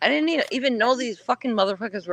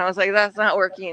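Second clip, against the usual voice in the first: ordinary talk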